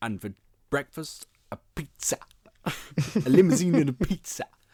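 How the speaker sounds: loud, high-pitched, big theatrical intonation. Recalling what you kept saying on a night out, doing a Tim Curry impression. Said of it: "impressions of Tim Curry... I just love his intonation".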